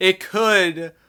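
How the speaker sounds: stress on could.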